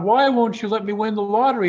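put-on sobbing. Telling a joke, acting out the man weeping as he complains to God, imitating someone sobbing. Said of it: "a booming voice comes out of the sky".

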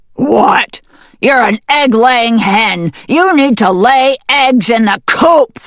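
loud, thunderous, booming, scolding tone. Reading a dog's line to the hen Sprout, thundering. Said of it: "the dog thundered".

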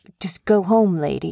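ordinary talk, nothing marked

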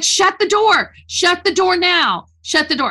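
high, mild put-on dad yell. Retelling how dad yelled at the kids: imitating dad yelling. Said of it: "my dad's yelling at my kids".

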